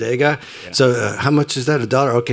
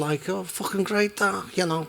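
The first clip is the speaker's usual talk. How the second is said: very soft, hushed, higher put-on Liverpool accent; 7 semitones higher, 9 dB quieter than usual. Describing how parents from liverpool talk, imitating a liverpool accent. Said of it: "parents that are from Liverpool talk like this".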